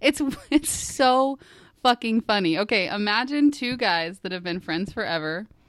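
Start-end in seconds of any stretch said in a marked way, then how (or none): 0.0-2.6 laughing while talking, pitched up. Trying to describe a funny show, laughing while talking. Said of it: "she can't even describe it without laughing".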